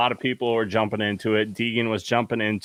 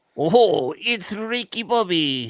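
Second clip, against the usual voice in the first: muffled put-on voice, higher; 8 semitones higher, 4 dB louder than usual. Joking about racing gear, doing a Ricky Bobby voice. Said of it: "You sound like a dog with peanut butter on the roof of your mouth".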